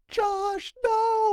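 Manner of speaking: very high, frantic, freaked-out, panicked yell. Retelling an older brother yelling while a dog chases the speaker, imitating a panicked yell. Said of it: "he's all freaking out for me too".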